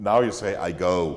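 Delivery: ordinary delivery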